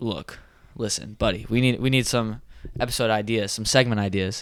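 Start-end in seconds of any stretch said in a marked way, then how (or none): none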